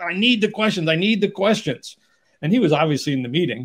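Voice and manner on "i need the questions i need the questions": raised, high-pitched, almost yelling. Retelling a company founder on the phone demanding questions: imitating someone almost yelling. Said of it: "almost yelling at me".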